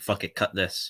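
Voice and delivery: normal talking voice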